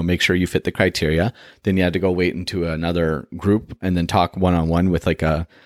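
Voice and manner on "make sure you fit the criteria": usual speaking voice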